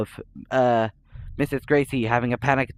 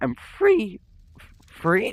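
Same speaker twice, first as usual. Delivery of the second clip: voice breaks and cracks on the word three; 12 semitones higher than usual. Listing points of a theory, the speaker's voice cracks: voice cracking. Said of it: "what the fuck was that voice crack?".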